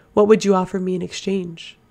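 usual speaking voice

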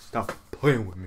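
deep, hard-man tough-guy voice. Retelling how a man talked like a tough guy, imitating deep tough-guy voice. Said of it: "That's how he sounded".

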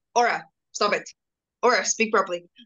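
ordinary talk

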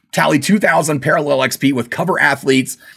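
plain

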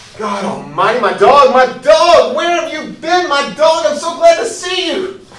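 high, rising, wildly overexcited, barely contained joyful gush. Acting a scene, suddenly spotting the missing dog again: overexcited. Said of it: "Let me calm down".

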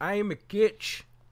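fake Irish or Scottish accent. Repeating that they are a coach: put-on Irish or Scottish accent. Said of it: "Why are you saying that in an Irish accent".

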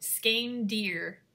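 slow, careful, spelling-out pace.

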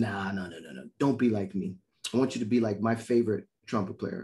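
ordinary talk, nothing marked

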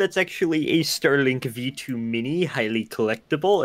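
nerdy comic book store clerk type voice. Answering a question, the speaker replies in Comic Book Guy voice. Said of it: "in the comic book guy voice".

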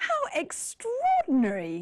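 high, swooping, utterly astonished exclamation. On an English lesson show, demonstrating how stronger surprise sounds: very surprised, higher voice. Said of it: "your voice goes even higher".

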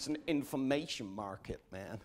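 put-on American accent. Speaker choosing to say a line in an American voice, put-on American accent. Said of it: "I want to say all these things in an American voice".

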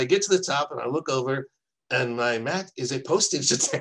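put-on laid-on German accent, spoken slowly. Retelling what a man said when he got to the top, German accent. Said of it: "you have to hear it in his German accent".

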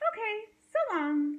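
sunny, breezy, cheerful. Narrator reads Rosie the Tumbleweed saying goodbye to Hank: cheerful. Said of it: "said Rosie cheerfully".

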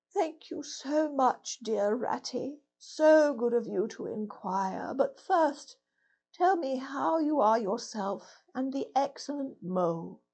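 faint, frail, feeble, weak voice. Reading Toad's reply to the Rat at his bedside, feeble voice. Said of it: "a feeble voice replied".

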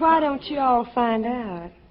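high, sultry Southern belle voice.

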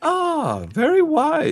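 put-on Chinese accent with sing-song lilt. Joking with a friend about a crescent hammer, speaker puts on a Chinese accent. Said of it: "I'm turning a little Chinese".

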